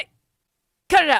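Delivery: very high, very loud, mock furious angry yell. Retelling what Tommy yelled at his neighbor: imitating an angry yell. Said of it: "what was he yelling very angry".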